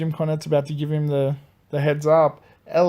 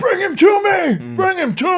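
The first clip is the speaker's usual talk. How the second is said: put-on scream, higher and louder; 4 dB louder than usual. Retelling a wrestler on the outside of the ring: imitating someone screaming.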